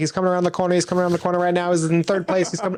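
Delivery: fast, very high, rattled-off race-caller patter. Describing videos from a dog track: fast dog track announcer voice. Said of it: "at a dog track where they're kinda, like, talking like".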